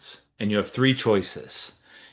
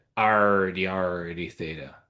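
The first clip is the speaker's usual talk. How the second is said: pirate voice, dragged out very slowly; 2 semitones lower than usual. A speaker working a polar conversion reads out the result, in a pirate voice. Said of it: "talk like a pirate".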